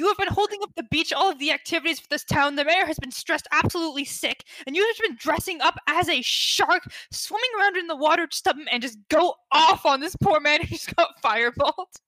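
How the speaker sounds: drawn-out telling-off. Playing a character scolding a man dressed as a shark: scolding a man. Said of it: "I'm gonna start scolding this man".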